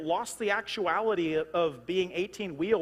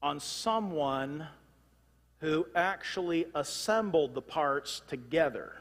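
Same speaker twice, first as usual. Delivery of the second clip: slow, deliberate, drawn-out, spelled-out phrasing; 3 semitones lower than usual. Explaining what an eighteen-wheeler depends on, said slowly. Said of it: "why did I even say that slow?".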